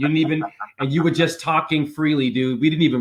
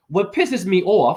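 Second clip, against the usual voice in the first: slight New York accent with raised pitch; 5 semitones higher than usual. Speaker notes his own accent slipping out, slight New York accent. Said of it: "there's my little New York accent".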